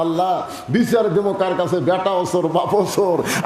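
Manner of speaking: normal talking voice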